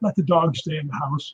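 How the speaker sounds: soft, hushed stage half-whisper. Retelling what the old man said after the speed bag moved: imitating a half-whisper. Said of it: "The old man just whispered to me".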